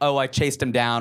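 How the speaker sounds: ordinary talk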